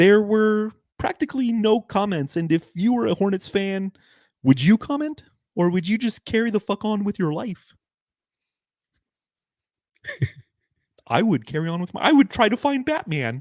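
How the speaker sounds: very high, squeaky cartoon puppet frog voice. Hosting the subreddit stakeout as Kermit the Frog, in a Kermit the Frog voice. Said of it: "let's let's do Kermit".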